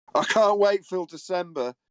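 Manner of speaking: acted sarcasm. Quoting what another person keeps saying, retelling a sarcastic remark. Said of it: "in a sarcastic tone".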